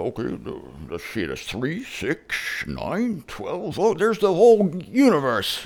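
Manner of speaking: swooping, animated deity voice.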